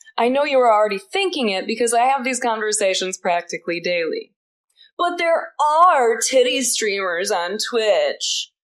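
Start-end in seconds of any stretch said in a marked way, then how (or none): 4.9-8.4 slow, drawn-out dude-bro drawl. Streamer voicing an imagined commenter's objection to them, in a dude bro voice. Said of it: "That's the dude bro's voice".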